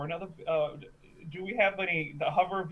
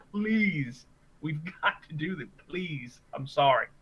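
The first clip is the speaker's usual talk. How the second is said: sarcastic, mock begging tone; 3 semitones lower than usual. Begging Isaac in character with fingers locked together: sarcastic pleading in character. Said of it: "very sarcastically".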